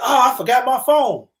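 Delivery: mock high, hollered-out call. Describing a crash video, imitating one of the girls hollering. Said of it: "One of them hollering like".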